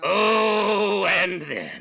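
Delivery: high, swooping theatrical villain voice, drawn-out "oh". Speaker ranting about a comic writer's storylines: full villain voice. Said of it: "Full villain voice".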